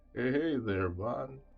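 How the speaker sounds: slow voice, like audio played at reduced speed. A narrator voices the stuffed bear greeting Vaughn, slowed-down Mister Bear voice. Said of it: "in like a slow kind of, almost uh, slowed down type of voice".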